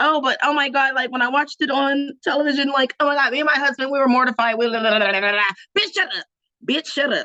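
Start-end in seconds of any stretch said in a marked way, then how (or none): 0.0-5.4 scornful, derisive, acted-out rehearsed-sounding delivery. Retelling a rehearsed excuse with mockery: mocking imitation of Kyle. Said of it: "Kyle's excuse, rehearsed excuse was".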